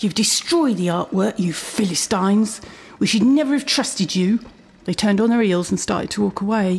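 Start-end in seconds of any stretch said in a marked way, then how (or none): 0.0-4.4 cold, withering, utterly disdainful, contemptuous tone. A woman turns to the narrator's group and speaks with utmost disdain. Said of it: "spoke in a voice of utmost disdain".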